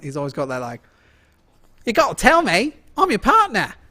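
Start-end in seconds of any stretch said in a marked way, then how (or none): 1.9-3.7 put-on very high, peppy, bouncy New Zealand accent. Showing a friend your favorite New Zealand accent, do Rhys Darby's peppy New Zealand accent. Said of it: "His is my favorite New Zealand accent".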